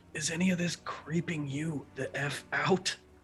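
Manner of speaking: quiet, hushed, confiding murmur. During the game, leaning over to another character to ask in a low voice. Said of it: "in a low voice be like".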